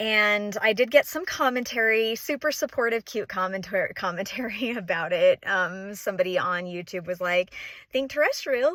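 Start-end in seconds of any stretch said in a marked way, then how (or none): 7.9-8.8 bright, cheery little voice, pitched up. Creator quoting a YouTube comment about how she says her channel name, cheery little voice. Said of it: "she says in this this cheery little voice".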